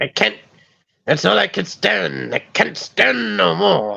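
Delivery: soft, gravelly, creaky old-cartoon sailor grumble. Speaker showing off his Popeye impression in conversation: Popeye impression. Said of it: "That is not good for my cold right now".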